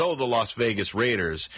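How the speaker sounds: ordinary delivery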